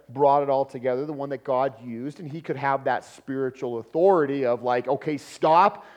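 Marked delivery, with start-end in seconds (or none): 4.9-5.7 loud, hard, stern, commanding tone. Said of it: "that kind of hard tone".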